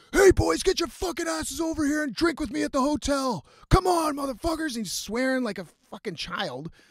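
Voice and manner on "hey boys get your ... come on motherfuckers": put-on shrill, foul-mouthed screaming, very high. Retelling a story about a man shouting at the group from a shuttle door, imitating someone screaming. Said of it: "He's screaming at us from the fucking door".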